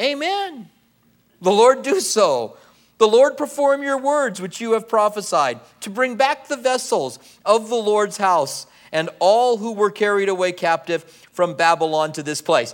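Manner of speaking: high-pitched sarcastic tone. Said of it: "does anybody sense a bit of sarcasm".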